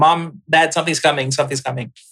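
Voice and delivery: ordinary talk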